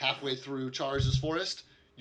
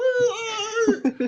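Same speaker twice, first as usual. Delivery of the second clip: put-on baby talk, higher and louder; 7 dB louder than usual. Voicing a character cheering on a friend: little pet talking voice. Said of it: "in his little, like, pet talking voice".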